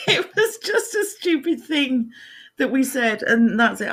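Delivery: talking through laughter. Explaining a silly remark to viewers, laughing while talking. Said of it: "I've broken".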